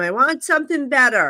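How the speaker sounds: ordinary delivery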